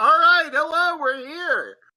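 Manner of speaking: shrill, very loud, high-pitched hollering yell. Voicing a character who hops off and calls to the pirates: yelling at the pirates. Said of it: "just starts yelling at the pirates".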